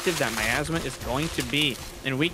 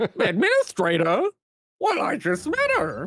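goofy 70s clown voice, high and swooping; 7 semitones higher, 3 dB louder than usual. Trading jokes with another speaker, doing a goofy 70s clown voice. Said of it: "That's like goofy clown voice number one from the 70s".

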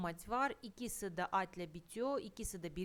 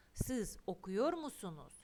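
ordinary delivery

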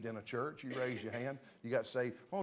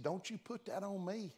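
put-on pitched-up Southern Georgia accent; 7 semitones higher, 3 dB quieter than usual. Speaker quoting his mother's reply to his offer to come down: imitating mom's georgia accent. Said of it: "That was my mama's Georgia talk".

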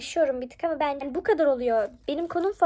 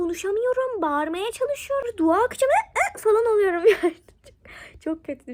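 high voice, speaking through laughter; 7 semitones higher than usual. Recounting a nightmare where speaking was impossible, laughing while telling. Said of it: "Şu an böyle gülerek anlattığıma bakmayın".

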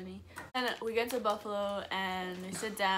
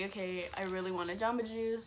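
ordinary talk

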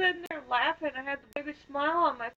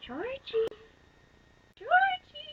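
high-pitched, creepy clown voice; 11 semitones higher than usual. Praised afterward by the other speaker, the speaker does a Pennywise voice. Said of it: "You do like a perfect Pennywise".

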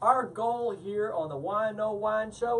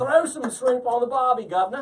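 loud, terrible, clumsy put-on Australian accent; 3 semitones higher, 5 dB louder than usual. Joking around with others, saying a line in a terrible Australian accent. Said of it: "That's my terrible Australian".

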